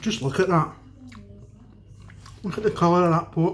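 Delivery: talking with mouth full of food. Tasting his finished dish for viewers, talking with mouth full. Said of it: "Excuse me for talking with my mouth full".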